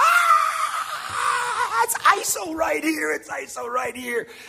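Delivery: shrill, very high, drawn-out yelled scream. Retelling a practice story about a linebacker calling the play: imitating someone screaming. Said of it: "Mike started screaming".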